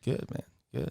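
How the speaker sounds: very quiet, hushed voice with bass added. Telling of a bar visit, quoting own reply to a guy: deepened voice. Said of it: "He's trying to add some depth to it".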